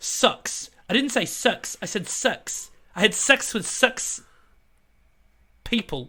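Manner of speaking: high put-on New Zealand accent, "sex" pronounced "sucks". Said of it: "That's my Kiwi accent".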